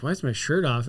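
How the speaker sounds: ordinary talk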